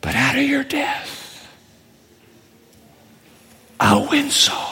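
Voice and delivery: soft, breathy, hushed whisper. Voicing a quoted promise over someone being stoned to death: whispering. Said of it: "Jesus whispers".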